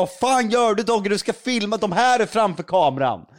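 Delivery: mock, loud screaming yell. Retelling the segment producer screaming at the fleeing photographer, retelling a scream. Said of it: "skriker bara".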